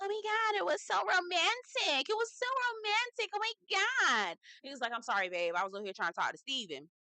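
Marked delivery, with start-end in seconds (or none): 0.0-4.4 very high, drawn-out, whiny pleading, put-on. Retelling what Maria said after the fireworks, imitating Maria's whiny voice. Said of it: "in a whiny, whiny voice".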